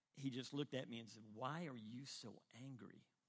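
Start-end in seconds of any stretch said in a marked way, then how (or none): 1.4-3.0 really soft, quiet, gentle, hushed. Recalling the speaker's bewildered dad asking a question, in a really soft voice. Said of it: "in a really soft voice".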